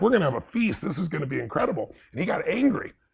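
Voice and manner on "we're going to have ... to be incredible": excited delivery. Retelling opening the door to groceries on Thanksgiving: imitating own excited past self. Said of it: "I was just so excited".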